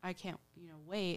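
usual speaking voice

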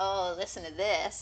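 ordinary talk

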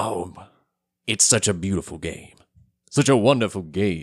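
reverent, awed, respectful voice. Co-host introducing the game of the week when asked, reverent voice. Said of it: "I'm approaching it with this kind of voice".

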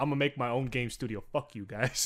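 ordinary talk, nothing marked

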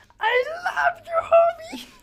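shrill, very high, loud voice. Doing a quick impression, which the listener says is Pee Wee Herman. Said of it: "that's Pee Wee Herman".

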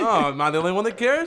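very loud, high, teasing mock parody. Teasing another speaker by imitating what he said: mocking imitation of a friend. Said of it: "You're like".

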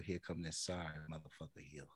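low, very soft whisper. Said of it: "just whisper".

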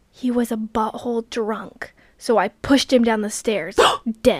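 mock whisper in an old lady voice. Retelling what an old lady leaned over and whispered, retelling an old lady's whisper. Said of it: "leaned over and whispered".

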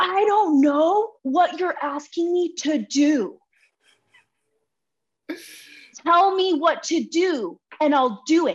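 mock screaming at the top of the voice, high, drawn out. Retelling turning around and screaming at another person: retelling a scream. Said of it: "I screamed like at the top of my voice".

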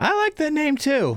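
put-on very high young child's voice. Narrating to players, voicing an unseen kid behind them: young, youthful voice. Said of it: "kind of a young, youthful voice".

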